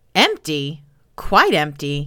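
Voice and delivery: thoroughly disgusted exclamation. Pelham looks into the empty chest, crying out in utmost disgust. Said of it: "he cried in a tone of the utmost disgust".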